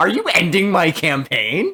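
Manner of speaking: high-pitched, fearful, alarmed tone. Apologizing to Daniel for scaring him, imitating Daniel's scared voice. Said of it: "I could hear that like fear in your voice".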